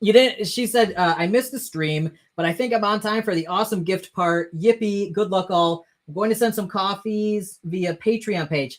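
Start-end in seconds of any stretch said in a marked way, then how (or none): none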